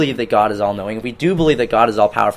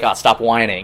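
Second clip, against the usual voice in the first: ordinary talk, nothing marked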